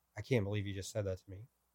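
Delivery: mock tearful voice. Retelling a woman's reaction after hearing the word home, imitating her crying. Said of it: "she broke down crying".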